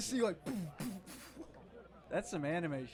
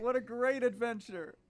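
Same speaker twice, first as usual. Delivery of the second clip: play-acted contented tipsy drawl, slow and high; 5 semitones higher, 6 dB louder than usual. Voicing a drunk man in a video who is happy with his pie: imitating a happy drunk man. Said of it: "you can tell he's loaded".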